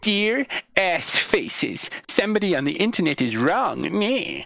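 high, sing-song whiny complainer voice. Imitating a whiny person writing in by email, in a whiny person impression. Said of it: "the best impression of a whiny person".

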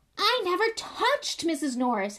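loud, very high, swinging outburst. Harry, aware of everyone looking at him, answers Filch loudly. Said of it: "Harry said loudly".

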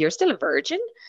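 mock, baffled, incredulous, disbelieving tone. Acting out what people keep asking, mock incredulous question. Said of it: "as an incredulous questioning".

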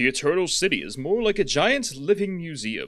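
put-on narrator-style read-aloud voice. Reading a passage out loud, popping in a put-on narrator voice. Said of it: "I'm gonna pop in a narrator voice".

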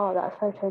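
usual speaking voice

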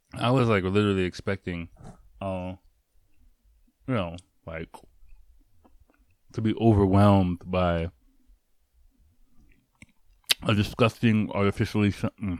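speaking while chewing, mouth full. Tasting a chocolate food, the speaker keeps talking with mouth full. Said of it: "I'm eating with my mouthful".

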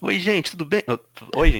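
loud put-on podcast host announcer voice. Greeting the podcast listeners, imitating Vitor. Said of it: "Eu tentei imitar".

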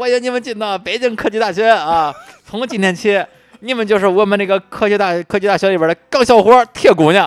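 put-on Henan dialect accent, very high, very loud. Recalling the university president's speech to new students, speak in a put-on Henan accent. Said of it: "我估计用河南话说".

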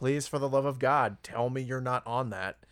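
put-on heartbroken, pleading tone. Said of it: "you can hear the heartbreak in her voice".

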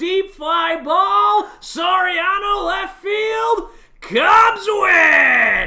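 booming, belted, slow, drawn-out call. Opening a podcast episode with a home run call: Len Kasper impression. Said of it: "That was my, uh, Lancaster".

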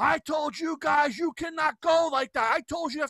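high screaming yell. Retelling how an old guy in a golf cart yelled at them: imitating someone screaming. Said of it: "he's screaming at us".

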